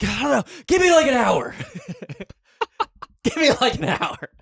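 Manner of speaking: put-on, very high pained scream, pleading. Retelling a cousin in pain answering a family member: imitating someone screaming in pain. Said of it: "screaming while he's saying".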